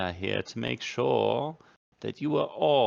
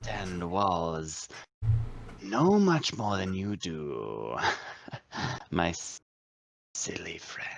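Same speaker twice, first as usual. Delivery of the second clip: put-on sad drunk lizard creature voice, lower; 3 semitones lower than usual. Game master voicing a lizardfolk who jokes with the players: sad drunk lizardfolk character. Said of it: "Well, I live here and I'm sad, so I'm drinking way too much alcohol. / He's been missing for at least three days. I don't know where he is. I've been scouring the entire town. I don't quite understand".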